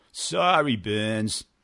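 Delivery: put-on Boston accent. Retelling a man who typed in the wrong company name, imitating a Boston accent. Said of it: "with the Boston accent".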